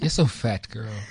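said kindly, friendly tone, no bite. Asked to say fat in a nice way: saying it in a nice way. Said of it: "say fat to me in a nice way".

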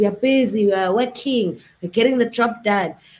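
South African politician voice with stock official phrasing. Retelling his reply when people said nothing was happening, in a South African politician voice. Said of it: "Sounding like a very South African politician".

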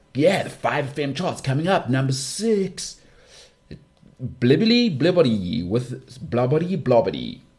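crazy radio DJ voice and cadence. Speaker recalling South African radio DJs announcing the charts, crazy Ian F and Sasha Martinengo voice. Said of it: "DJs used to do this crazy voice".

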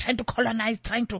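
ordinary delivery

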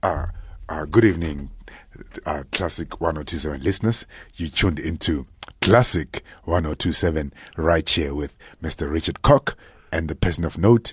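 put-on, deepened low voice. Doing a Classic 1027 intro for listeners, in a put-on deep voice. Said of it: "let me do like with my deep voice".

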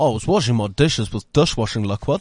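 put-on New Zealand accent with neutral vowels. Quoting a New Zealand dishwashing liquid ad, in a New Zealand accent. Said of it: "New Zealand ad... neutral vowel like us".

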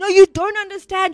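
put-on screaming man's voice. Retelling how he screamed at the interviewer: imitating Charles Manson screaming. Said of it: "he was screaming at the".

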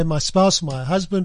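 ordinary talk

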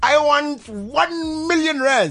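mock grand voice, high, slow, stretched out.

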